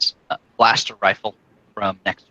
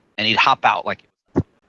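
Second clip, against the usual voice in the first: normal talking voice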